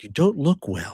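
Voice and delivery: whispered words. Voicing a character who quietly tells a sick mentor: whispering in character. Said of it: "I'm in whispered tones".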